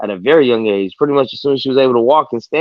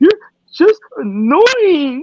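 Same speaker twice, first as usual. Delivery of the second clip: tearful crying voice, higher pitch. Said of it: "and she's crying".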